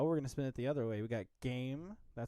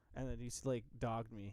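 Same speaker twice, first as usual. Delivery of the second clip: ordinary talk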